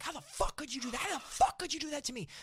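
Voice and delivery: put-on top-of-the-lungs scream, very high and loud. Retelling a driver's call after a cancelled ride: imitating a driver screaming. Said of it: "Just screaming at the top of his".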